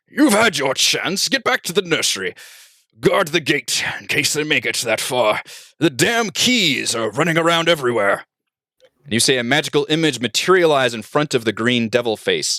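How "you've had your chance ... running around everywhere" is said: ringing, commanding, authoritative voice. Narrator reading a new voice that rings out, commanding tone. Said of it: "A new voice rings out in a commanding tone".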